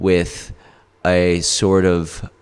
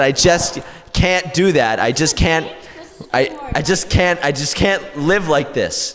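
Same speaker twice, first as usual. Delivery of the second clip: mock-emotional pleading, much higher; 9 semitones higher than usual. Retelling a plea to Bird at the waterfall, speaker acts out mock-emotional pleading. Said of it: "Sometimes I get emotional talking about Bird".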